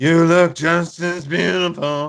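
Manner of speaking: loud, belted, high grandma voice. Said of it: "got that [name] voice going".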